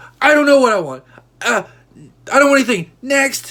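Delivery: put-on, very high, very loud, fed-up angry snap. Retelling snapping at the cashier at the counter: imitating own angry snap. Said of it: "they knew I had snapped".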